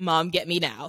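ordinary delivery

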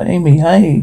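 plain reading voice

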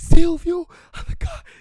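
shrill, very high, full-volume desperate yell. Retelling a mother desperately calling from the river: imitating someone yelling. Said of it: "a gritar".

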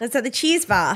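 very strong Australian accent. Repeating a friend's line while trying out accents, very Australian accent. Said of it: "That was very Australian".

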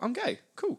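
mock high-pitched tone. Imitating what the other speaker supposedly says, in a high-pitched tone. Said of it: "in a high-pitched tone".

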